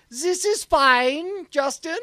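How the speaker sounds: bad put-on German accent, high and slow.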